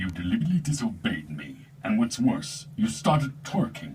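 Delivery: loud villain voice spoken into a bucket. Performer voicing Vader in a stormtrooper parody, Vader voice through a bucket. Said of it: "genius effect?".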